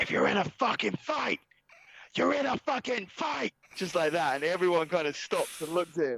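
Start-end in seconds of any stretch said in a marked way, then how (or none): 0.0-3.5 mock very high, shrill screech. Retelling how a man walked onto the mat and screamed, imitating someone screaming. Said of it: "he like screams".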